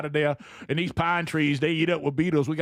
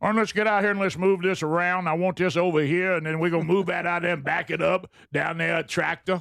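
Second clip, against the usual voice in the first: put-on Louisiana accent. Performing a bit for the others, in a Cajun-sounding accent. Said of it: "Is he Cajun?".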